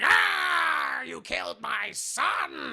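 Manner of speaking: very slow, high, distraught, very upset, long drawn-out Ah. Retelling a movie scene where a truck is destroyed: imitating upset Green Goblin. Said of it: "And he's very upset".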